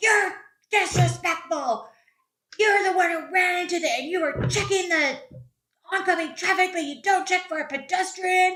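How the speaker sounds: mock shrill, indignant, angry, very high voice. Retelling what the very angry older man shouted back: imitating an angry man's retort. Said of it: "And he was like".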